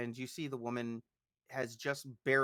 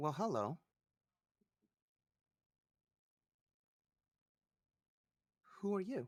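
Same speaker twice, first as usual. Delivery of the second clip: sweet-sounding, higher-pitched woman's voice; 6 semitones higher, 4 dB quieter than usual. A game master voices a startled woman greeting the players, in a sweet voice. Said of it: "I would say a sweet voice".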